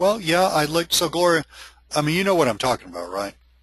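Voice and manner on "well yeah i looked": unsure, hesitant, halting, uncertain delivery. Imitating the hesitancy in someone's voice on the phone, a hesitant reply. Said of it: "hesitancy in their voice, like".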